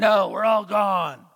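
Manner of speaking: slow, guttural, demonic voice. Retelling a long session, the demon answering a question, demonic guttural voice. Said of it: "in this demonic, guttural voice".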